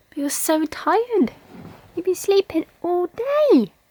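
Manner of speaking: put-on soft cooing baby voice.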